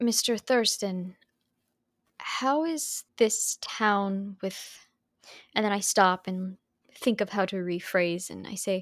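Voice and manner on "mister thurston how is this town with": timid, tentative, slow, breaking-off voice, nearly afraid. A player's character quietly asks a man a question, almost afraid to speak up. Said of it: "I will quietly ask, almost afraid to speak up".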